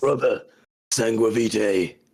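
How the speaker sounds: most grim, dark voice. Showing how to say the name sangua vitae in the most grim dark voice. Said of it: "you've got to say it in the most grim dark voice".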